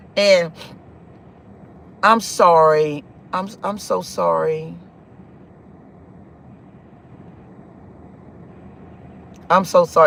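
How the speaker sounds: pained, aching, low and drawn out. Recounting telling a partner about being touched before, emotional, hurting. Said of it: "It hurts it hurts my heart".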